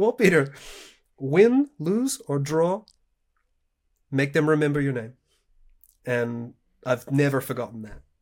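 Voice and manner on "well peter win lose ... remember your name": put-on strong loud Portuguese accent. Retelling advice given to you before the invitational, imitating Anderson's Portuguese accent. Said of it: "I'm going to do his Portuguese accent".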